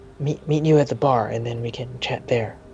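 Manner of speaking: whispered speech. Voicing the second mate who runs down to Bovar: a whisper. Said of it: "and he whispers".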